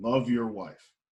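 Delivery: put-on flat delivery. Retelling what a man told him when he hoped for wisdom, imitating a deadpan reply. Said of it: "he looks at me as deadpan as he can get".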